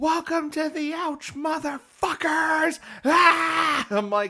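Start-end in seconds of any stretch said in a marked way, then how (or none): 0.0-2.8 play-acted, piercing, very high, shrill yell. Quoting a line from Netflix's Cowboy Bebop adaptation: imitating Faye shouting. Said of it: "Faye shouts".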